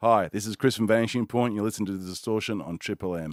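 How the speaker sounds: put-on radio announcer voice, station ident style. Recording a station id for a triple m show: put-on radio voice. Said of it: "I just put on a radio voice".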